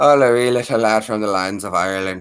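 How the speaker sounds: put-on Irish brogue. Trying out an accent right after announcing it, Irish accent. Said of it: "An Irish accent".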